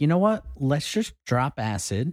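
ordinary talk, nothing marked

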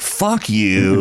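ordinary talk

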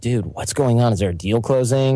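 put-on nonchalant, casual tone. Retelling a question to a mid-level associate: imitating own nonchalant question. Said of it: "sort of nonchalant".

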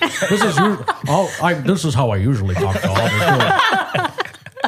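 goofy, big, dumb, dopey voice, very slow drawl. Showing the big dumb voice that listeners expect: big dumb voice. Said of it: "making a big dumb voice like this".

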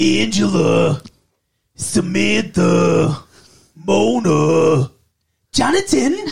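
loud, very slow sitcom voice, one name stretched out. Doing a short impression after being told to go for it: Tony Danza impression. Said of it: "the best Tony Danza impression from Who's the Boss".

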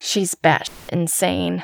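ordinary delivery

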